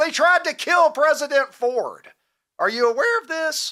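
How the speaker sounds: voice cracking with excitement. Speaker excitedly starts telling another person a story: voice cracking with excitement. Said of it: "My voice is cracking".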